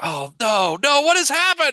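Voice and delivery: very high, rising cry of shocked dismay. Narrator voicing a cleric who walks in on twenty-five dead people, shocked. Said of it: "it's just shocked by the bloodshed".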